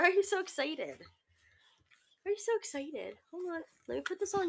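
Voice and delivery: hushed, high, soft cooing voice.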